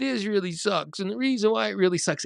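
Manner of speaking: put-on high, whiny little kid voice. Showing what they say to their subconscious mind, in a whiny little kid voice. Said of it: "I even pretend I have a little whiny kid voice".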